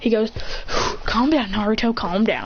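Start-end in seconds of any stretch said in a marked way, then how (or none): none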